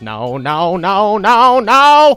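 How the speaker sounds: very loud, slow cartoon voice, each "no" drawn out, swooping. Recalling a bit, saying no repeatedly: Cleveland voice. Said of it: "no, no, no in the uh, Cleveland voice".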